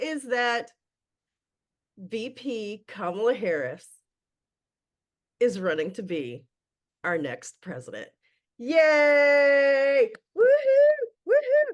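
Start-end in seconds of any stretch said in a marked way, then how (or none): 8.6-11.7 joyful, loud, high, gleeful whooping cheers. Opening a podcast episode about the presidential race, gleeful cheering. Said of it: "by the glee in my voice and the cheering".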